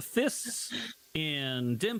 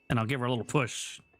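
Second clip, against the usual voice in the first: usual speaking voice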